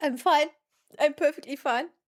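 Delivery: helpless, uncontrollable laughter through the words. Mid-conversation, trying to get a grip while laughing uncontrollably. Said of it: "I can't stop".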